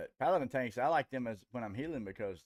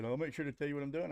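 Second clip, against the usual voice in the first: play-acted, fast, curt, irritated, snippy tone; 4 semitones higher than usual. Recounting what another player said during a fight, imitating a snippy reply. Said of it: "he got all snippy and said".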